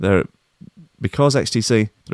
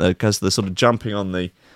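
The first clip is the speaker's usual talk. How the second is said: plain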